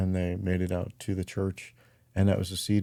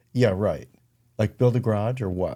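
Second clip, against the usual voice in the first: mocking, dry, sarcastic tone; 2 semitones higher, 4 dB louder than usual. Retelling a reply to an elder's suggestion: imitating own sarcastic reply. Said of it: "and sarcastically".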